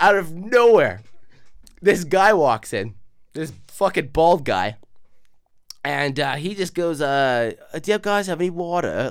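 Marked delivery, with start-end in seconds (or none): 7.0-9.1 put-on British accent, slower. Retelling what a bald guy who walked in said, British accent. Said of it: "Like in this like British accent".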